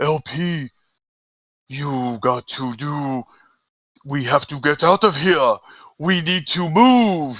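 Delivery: pushed from the throat, sensei-like. Recalling a stealth samurai role, showing how he talked: Master Splinter voice. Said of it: "I would talk like this".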